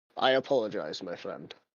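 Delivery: quiet, soft-spoken, low voice. Speaking to another character before grabbing him, a quiet apology. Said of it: "I say quietly to you".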